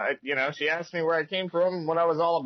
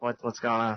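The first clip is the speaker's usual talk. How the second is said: quiet, low-key, hushed half-whisper; 6 semitones lower than usual. Voicing a character asking quietly about a game: half-whispering character. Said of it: "he's whispering".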